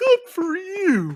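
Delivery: very high, put-on cartoon bear voice. Voicing a bear companion congratulating a player: Yogi Bear voice. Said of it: "do that Yogi Bear thing where he goes".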